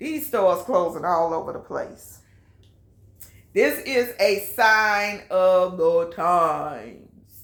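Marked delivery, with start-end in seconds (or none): 3.5-7.4 very slow drawl, words stretched long. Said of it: "in my [name] voice".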